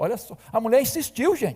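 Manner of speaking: ordinary delivery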